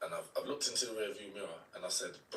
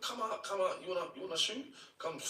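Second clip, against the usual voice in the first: shrill, very high screaming; 10 semitones higher than usual. Retelling going up the road calling out the hiding shooters: retelling a scream. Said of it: "I'm screaming".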